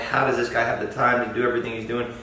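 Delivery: ordinary delivery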